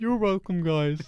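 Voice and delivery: sliding up into a high cartoon puppet voice. Trying out a voice for the other speaker: Kermit voice. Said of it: "Kind of turned into Kermit a bit there".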